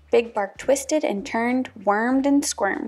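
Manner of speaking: ordinary delivery, nothing marked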